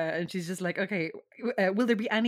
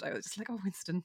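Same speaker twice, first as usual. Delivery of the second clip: ordinary delivery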